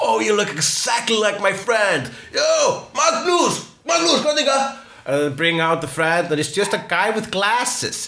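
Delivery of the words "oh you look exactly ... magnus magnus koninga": loud, excited shout. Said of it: "people go".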